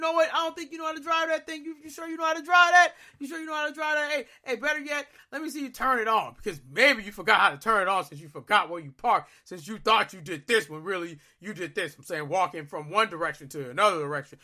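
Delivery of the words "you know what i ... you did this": put-on, jokey, teasing, needling tone. Retelling how someone teased him about forgetting where he parked: imitating someone teasing. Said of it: "I gotta take all the jokes".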